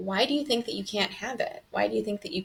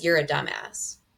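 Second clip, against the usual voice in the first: put-on short, curt tone, pitched lower; 5 semitones lower than usual. Retelling answers given to an ex-husband: imitating own short curt tone. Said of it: "I'm kind of short and I'm kind of like".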